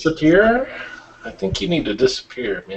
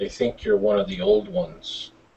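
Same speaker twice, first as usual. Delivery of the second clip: low muttered whisper under the breath; 5 semitones lower, 4 dB quieter than usual. A player speaks in character over to another character, whispered under breath. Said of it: "I'll kind of whisper under my breath".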